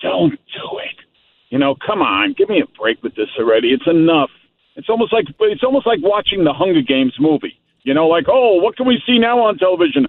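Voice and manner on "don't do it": hushed, soft, breathy whisper. Mocking a word that scares them, whispering like Mister Magoo. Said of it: "when he whispers it".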